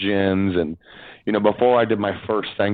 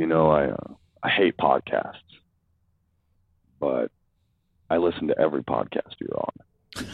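very quiet, offhand, low-key casual remark; 5 semitones lower, 4 dB quieter than usual. Retelling a remark made while rocking the twins: imitating a quiet casual remark. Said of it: "very casually, very quietly, he's like".

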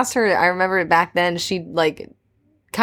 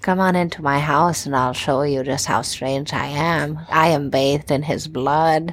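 put-on creepy voice, pitched lower; 3 semitones lower than usual. Acting out a predator luring a child: playing a creepy predator. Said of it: "a predator trying to lure in a child".

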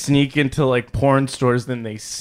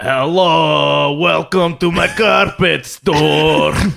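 very slow, rough, creaky voice, long drawn-out hello; 2 semitones higher, 3 dB louder than usual. Jumping into an impression of a relative during group banter: imitating an uncle. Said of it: "I'm doing an impression of my uncle".

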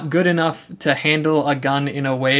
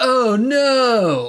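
high-pitched cry with the "no" stretched long; 9 semitones higher than usual. Retelling what Johnny says after landing and hurting his leg, Johnny voice. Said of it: "I really like your Johnny voice".

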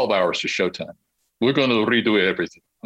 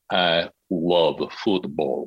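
sultry, slow, low voice from the back of the throat; 5 semitones lower than usual. Coaching her to say a line for a performance: slow, throaty, sexy delivery. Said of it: "say it very slowly".

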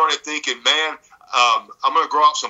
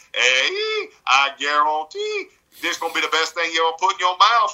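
put-on heavy, high, swooping, sing-song Cajun accent; 5 semitones higher than usual. Retelling how the Cajun chef on local television talked: Justin Wilson Cajun voice. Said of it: "And that's the way that he talked".

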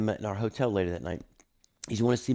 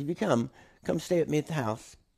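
awful fake English accent, raised pitch; 6 semitones higher, 4 dB louder than usual. Speaker retells a man's invitation to him, in a horrible English accent impression. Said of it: "I'm doing a horrible English impression".

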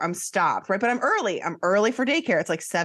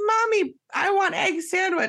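put-on shrill, very high-pitched little kid scream; 10 semitones higher than usual. Retelling a wait in a coffee line: imitating a child screaming. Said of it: "Kaya's screaming the whole time".

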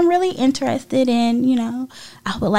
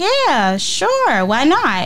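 put-on sarcastic drawl, very slow, swooping pitch; 3 semitones higher than usual. Retelling his reply to an invitation to meet again: imitating a sarcastic reply. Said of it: "he said it real sarcastically".

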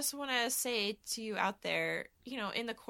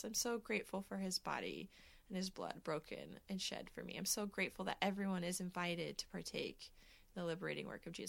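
near tears, choked-up voice catching; 4 semitones lower, 13 dB quieter than usual. A speaker reflecting aloud with gratitude, choking up and near tears. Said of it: "I'm going to cry just thinking about it".

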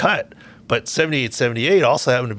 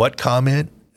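put-on flat deadpan delivery. Retelling his first Titans press conference answer about a mentor comment; retelling a deadpan reply. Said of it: "the way he deadpanned it and went".

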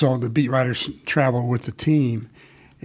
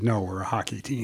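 mock flat deadpan delivery, much quieter; 3 semitones lower, 8 dB quieter than usual. Telling a story of a basketball player answering a fan at an airport, retelling a deadpan reply. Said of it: "looked down and deadpan and said".

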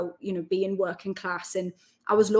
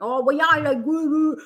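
put-on overdone Geordie accent, laid on thick, loud, high; 7 semitones higher, 5 dB louder than usual. Mocking Geordies who thicken their accent after they leave; exaggerated thick Geordie accent. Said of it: "starts thickening up their accent".

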